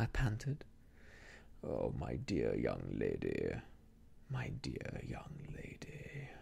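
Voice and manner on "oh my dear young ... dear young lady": very low, slow, caressing, coaxing, soothing coo. Narrator reads a man soothing a frightened young woman caught at a door, caressing and soothing. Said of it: "how caressing and soothing his manner was".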